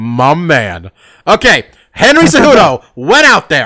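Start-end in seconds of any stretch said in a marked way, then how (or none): 0.0-0.9 laid-back, relaxed movie-star style voice. Showing a better version after criticizing another's attempt: Denzel Washington impression. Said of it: "it was like Denzel with his balls".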